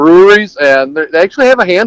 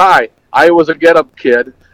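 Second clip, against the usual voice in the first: usual speaking voice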